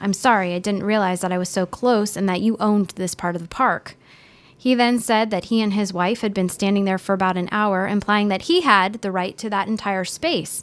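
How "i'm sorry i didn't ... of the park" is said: ordinary talk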